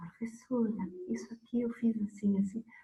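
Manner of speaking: shy, timid, soft, high little voice. A teacher recalls a shy student asking her something: imitating Fefe speaking softly. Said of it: "falando baixinho".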